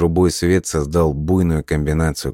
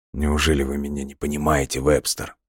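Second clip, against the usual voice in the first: whispering, quieter; 5 dB quieter than usual. A man asks Webster something, whispered. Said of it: "произнес он шепотом".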